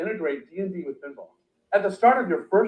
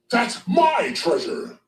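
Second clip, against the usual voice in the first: put-on dragon character voice; 4 semitones higher than usual. Voicing a dragon in a game: dragon voice. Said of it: "I like that voice for the dragon's cool".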